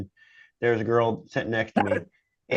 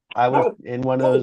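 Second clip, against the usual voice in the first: usual speaking voice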